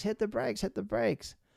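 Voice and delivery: put-on, shrill, very high, repeated scream. Recounting a runaway forklift, the uncle yelling at the speaker: imitating Roger screaming. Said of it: "Roger is screaming at me like".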